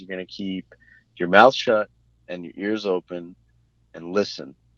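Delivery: ordinary talk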